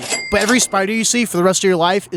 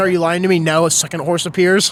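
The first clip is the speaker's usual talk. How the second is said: ordinary talk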